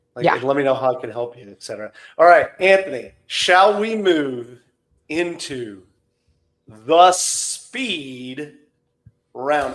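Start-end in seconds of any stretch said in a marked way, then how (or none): 2.2-9.8 very slow, halting, drawn-out, raised voice. Host moving the guest anthony on to the speed round: talking slowly. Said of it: "I'm talking slowly".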